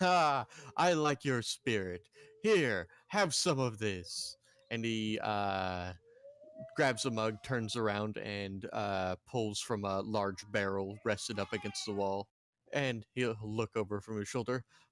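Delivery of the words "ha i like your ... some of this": hearty, booming, laughing voice of a rotund barkeep. Voicing a rotund barkeep welcoming the party: booming rotund barkeep voice. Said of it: "booming laughter from a rather rotund man".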